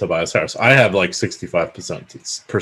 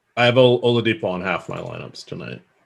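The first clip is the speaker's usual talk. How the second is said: ordinary talk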